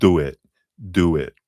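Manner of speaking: slow, put-on New Jersey accent. Relaying what she is saying, the speaker puts on a New Jersey accent. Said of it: "she's speaking in a New Jersey accent".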